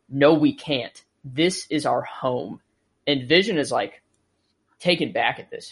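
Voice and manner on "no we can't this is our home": mock-angry, serious, slower. Speaker recapping a scene, quoting a character's reply, retelling an angry, serious line. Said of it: "very angrily and kind of serious".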